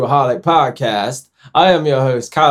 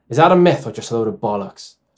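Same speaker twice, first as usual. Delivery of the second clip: attempted, fake Irish accent. Host switches accents for the next round, attempted Irish accent. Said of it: "I want to do an Irish one for this one".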